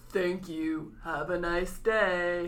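put-on, mock robot voice. Speaker joking about what robots say, in a robot voice. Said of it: "when a robot kills someone, they go".

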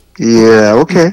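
gentle, soothing, coaxing tone. Responding to a co-host's prediction of a Tigers World Series, like talking someone on a ledge. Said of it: "You had that tone of voice like you're talking to someone out on a ledge".

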